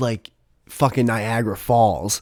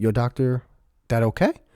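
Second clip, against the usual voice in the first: heavy put-on Brazilian accent, laid on thick; 6 dB quieter than usual. Retelling what she said to him: imitating a thick brazilian accent. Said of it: "she has such a thick accent".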